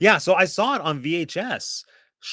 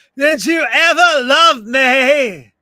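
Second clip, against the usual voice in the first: very slow, loud, shrill scream, "me" stretched; 10 semitones higher, 11 dB louder than usual. Showing how an actress screams in the movie: Drew Barrymore screaming voice. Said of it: "Drew Barrymore in her screaming voice".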